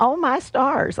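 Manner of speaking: high, slow, fond motherly voice.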